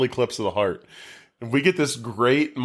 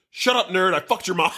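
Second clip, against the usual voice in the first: play-acted sudden, high, angry snapping outburst; 8 semitones higher than usual. Recapping a movie, voicing a character who snaps back: retelling an angry snap. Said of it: "Jeff just snaps and goes".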